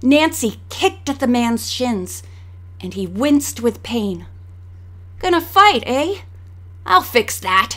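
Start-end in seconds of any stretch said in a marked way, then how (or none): 5.2-7.8 scornful, jeering sneer, pitched up. Reading the man Nancy kicked in the shins, sneering. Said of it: "he sneered".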